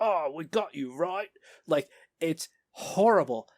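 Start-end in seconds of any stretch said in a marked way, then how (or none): 0.0-1.3 high, cartoonish put-on Cockney henchman bad-guy voice. Mocking bad guys in animated Batman episodes: imitating a Cockney henchman. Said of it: "the bad guys are like".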